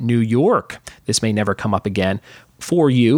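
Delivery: normal talking voice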